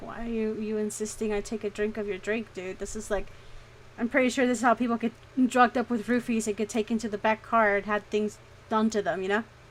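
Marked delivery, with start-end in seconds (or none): none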